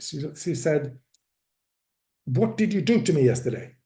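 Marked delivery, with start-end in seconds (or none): 2.3-3.6 acted irritated, annoyed, pushy tone. Retelling a program participant's question at the morning check-in: imitating an annoyed voice. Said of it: "said in an annoyed voice".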